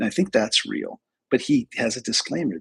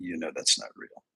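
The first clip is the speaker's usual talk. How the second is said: put-on, whispered, breathy, hushed, dry deadpan; 6 semitones lower, 9 dB quieter than usual. Retelling what a child said about a video: imitating a deadpan kid. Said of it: "and he was this deadpan".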